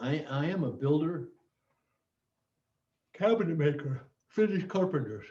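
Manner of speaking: speech distorted by yawning. Introducing oneself at a weekly safety meeting, yawning. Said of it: "I'm sorry for yawning".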